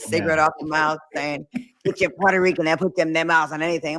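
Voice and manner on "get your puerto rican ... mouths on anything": really gravel-throated, gravelly voice. Retelling what a grandmother said, imitating grandma's gravelly smoker voice. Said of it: "really gravelly throated".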